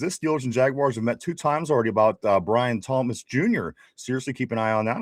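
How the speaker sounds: ordinary talk, nothing marked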